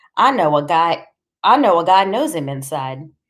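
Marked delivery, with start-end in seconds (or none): none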